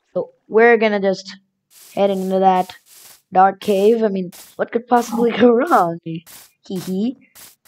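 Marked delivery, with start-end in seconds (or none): none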